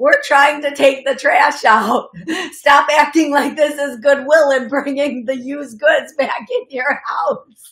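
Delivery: loud spirit voice, laughing throughout.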